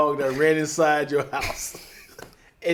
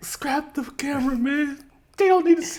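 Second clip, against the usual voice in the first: very high, tearful, sobbing, begging tone; 10 semitones higher than usual. Acting out someone begging to keep a prank off camera: mock crying while pleading. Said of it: "You start crying like".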